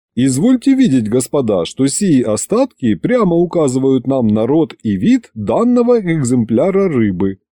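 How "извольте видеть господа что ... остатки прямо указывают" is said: ordinary delivery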